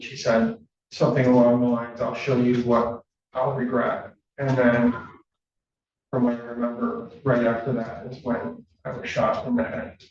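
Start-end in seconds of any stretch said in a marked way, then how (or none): none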